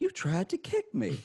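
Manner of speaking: very high-pitched, indignant, super offended tone. Retelling a fight story, quoting a man who caught a kick: imitating someone super offended. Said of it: "super offended".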